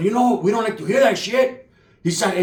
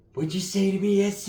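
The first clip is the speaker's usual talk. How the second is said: imitated angry voice, quieter; 5 dB quieter than usual. Retelling a fight story, imitating a cousin getting mad. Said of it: "I never seen my primo get mad".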